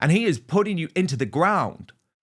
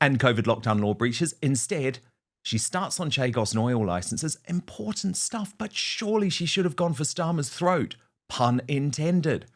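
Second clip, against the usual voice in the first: ordinary talk, nothing marked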